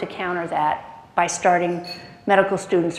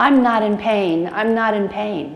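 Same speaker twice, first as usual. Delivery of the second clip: put-on, slow, drawn-out repeated yell; 3 semitones higher, 3 dB louder than usual. Retelling a physician's words while running away: imitating someone yelling.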